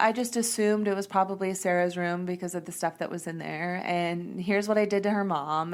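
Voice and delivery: ordinary talk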